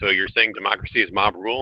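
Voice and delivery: plain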